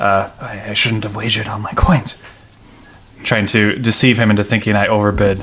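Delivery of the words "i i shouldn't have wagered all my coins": fast, nervous mumble muttered under the breath. Player's character faking nervousness during a wager, nervous mumbling under breath. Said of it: "I mumble something under my breath".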